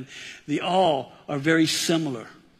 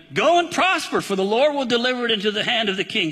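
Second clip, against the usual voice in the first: heavy mockery, high sing-song, a touch sarcastic; 6 semitones higher than usual. Reading a prophet's answer to the king aloud: imitating sarcastic mocking reply. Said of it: "A little sarcastic, a lot of mocking".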